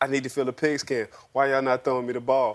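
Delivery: mock diva, dramatic griping. Retelling a receiver walking to the sideline: imitating a complaining receiver. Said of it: "he walking to the sideline like".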